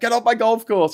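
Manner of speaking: acted, shrill, loud, furious old man yell. Retelling a movie scene, acting out a golfer yelling at a trespasser, imitating a man going nuts. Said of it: "he's going nuts because he's like".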